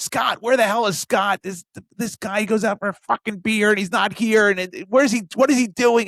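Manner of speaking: mock yelling. Retelling how a woman yelled and cursed about Scott; imitating her yelling. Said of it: "And so she's yelling".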